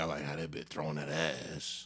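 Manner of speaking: put-on low, freaky, dirty-sounding old-timer voice. Describing what one side of a split screen shows: freaky old-head voice.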